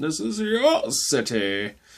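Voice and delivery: bad villain voice, high, swooping, very drawn out. Explaining a creative choice, the speaker quotes a villain's speech; bad Bane impression. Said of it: "the worst Bane impression you'll ever hear".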